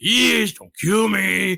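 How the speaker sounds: weird, odd, put-on Texas accent, begging tone. Retelling a movie scene, the speaker voices Hans: Hans Gruber's weird Texas accent. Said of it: "doing this really weird accent, like he's from Texas".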